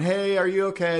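high-pitched screamed yell. Retelling people on a boat calling to a swimmer: imitating people screaming. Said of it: "They're screaming to my wife".

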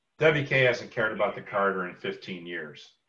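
soft, deadpan, dead-serious delivery. Retelling a man's reply once the talk turned to wka: retelling a deadpan remark. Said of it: "he was just deadpan".

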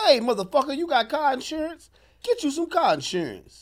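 very high, loud, crass hard-sell commercial voice. Showing someone how to deliver a fake insurance ad line: crude mock commercial pitch. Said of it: "Say it like this".

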